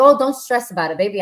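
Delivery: normal talking voice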